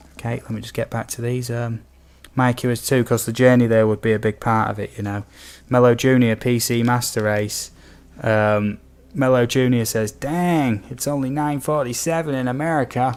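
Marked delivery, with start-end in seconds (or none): 10.1-13.2 terrible, clumsily done put-on American accent. Quoting what someone says, in a bad American accent. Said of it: "please excuse my terrible um, American accent there".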